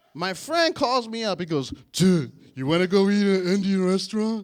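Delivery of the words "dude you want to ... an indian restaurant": dopey, big-lunk cartoon starfish voice. Retelling a friend's phone call, the speaker quotes him in a Patrick from SpongeBob voice. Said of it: "he sounds just like Patrick from SpongeBob".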